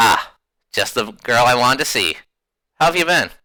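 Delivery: easy, casual, unbothered, nonchalant tone. Voicing a character who smiles at a player: nonchalant. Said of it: "he's pretty nonchalant".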